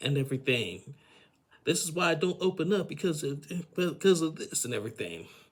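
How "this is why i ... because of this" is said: raised, pitched-up yelled outburst. Retelling what Georgie yelled at Darcy: imitating someone yelling. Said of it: "he started yelling at her".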